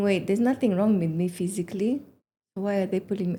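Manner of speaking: normal talking voice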